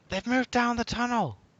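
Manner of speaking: shrill, very high yell at full volume. Voicing the tower girl in the game scene: shouting. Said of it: "the tower girl shouts".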